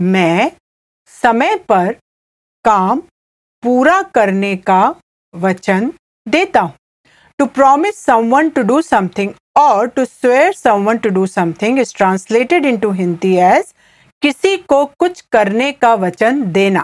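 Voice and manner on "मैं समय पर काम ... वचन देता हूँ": slow, halting, careful word-by-word delivery. Repeating a Hindi sentence for learners: said slowly. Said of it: "I'll say it again slowly".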